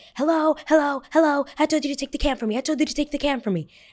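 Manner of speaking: high-pitched, angry flipping-out outburst. Retelling a passenger losing it at a flight attendant: imitating someone flipping out. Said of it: "She starts flipping out".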